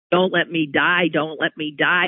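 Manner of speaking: put-on begging, pleading tone. Recounting a dying patient's plea for the vaccine, retelling his begging. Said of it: "He kept begging".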